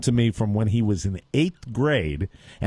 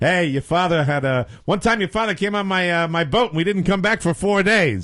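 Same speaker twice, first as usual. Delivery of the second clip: put-on higher Massachusetts accent; 7 semitones higher than usual. Retelling a line Rod Langway said at a meeting: Rod Langway impression, Massachusetts accent. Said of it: "he's got that, uh, Massachusetts accent".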